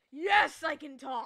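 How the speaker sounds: very loud, booming, growling talking-bear voice. Voicing a bear that growls at another character: growling talking bear voice. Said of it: "growls at Alouette like".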